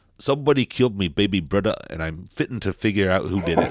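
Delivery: put-on Newcastle Geordie accent. Introducing a revenge story set in Newcastle, in a Geordie accent. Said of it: "that's the best Geordie accent I've ever heard".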